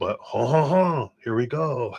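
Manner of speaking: very poor put-on French accent, high and slow. Starting a reading for a donor, in a very poor fake French accent. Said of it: "I'm faking a very poor French accent".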